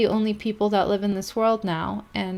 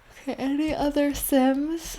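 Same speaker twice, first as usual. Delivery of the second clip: talking through a yawn, higher; 5 semitones higher than usual. Playing the sims and looking for other sims, the speaker talks while yawning. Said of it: "Sorry, I'm yawning so much".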